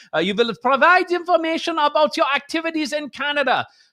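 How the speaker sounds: sinister put-on German accent. Rereading the CRTC's demand for information: menacing German accent. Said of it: "If you say it with a menacing German accent".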